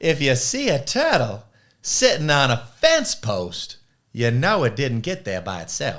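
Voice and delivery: very loud, bad, deep, swooping South Carolina accent. Quoting a coach's favorite saying: imitating coach's South Carolina accent. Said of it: "I'll do an awful job trying to imitate his accent".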